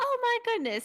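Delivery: thrilled, super excited exclamation, very high pitched. Voicing the sage greeting the players on arrival: super excited. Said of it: "he's super excited to see you guys".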